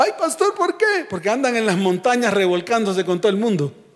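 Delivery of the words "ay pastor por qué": bleating goat voice, much higher, slower. A pastor retells a counseling session, quoting a woman in a goat-like voice. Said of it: "Con voz de cabrita".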